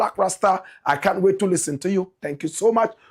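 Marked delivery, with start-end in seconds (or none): none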